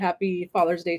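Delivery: ordinary delivery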